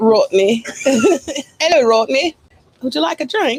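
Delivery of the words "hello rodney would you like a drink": high, hammed-up mock English accent. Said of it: "Say it again".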